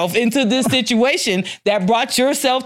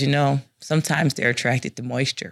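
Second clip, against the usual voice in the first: very low, quiet, matter-of-fact, analytical; 10 semitones lower, 5 dB quieter than usual. Retelling how Steve explained the lizard in the speaker's suitcase: Steve's analytical voice. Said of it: "in his very analytical voice".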